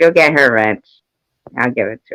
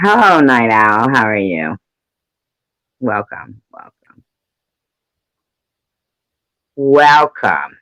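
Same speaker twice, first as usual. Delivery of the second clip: dripping with contempt, scornful, disdainful delivery. Greeting the newcomer night owl, with a disdainful welcome. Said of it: "You hear the disdain in my voice?".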